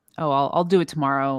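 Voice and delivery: ordinary talk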